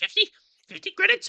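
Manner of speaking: shrill cackling merchant voice, very high and very loud. Game master voicing a character asked how much is owed, cackling a little. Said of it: "he kind of cackles a little bit".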